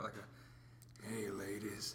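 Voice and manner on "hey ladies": sleazy, sexy, sickly-sounding male voice. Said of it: "But you sound like a".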